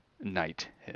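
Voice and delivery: whispering sword voice. Voicing a glowing sword that speaks to the players: whispering sword voice. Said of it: "you hear the sword whisper".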